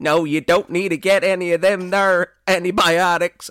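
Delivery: very high, very loud put-on Arizona housewife accent. Mocking anti-vax talk by imitating some housewife in Arizona; put-on Arizona housewife accent. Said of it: "I don't know what this accent is".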